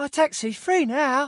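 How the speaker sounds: loud, very high-pitched Victorian street urchin voice. An actor trying readings of a taxi line: Victorian street urchin voice. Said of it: "How about a Victorian street urchin?".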